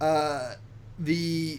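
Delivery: plain reading voice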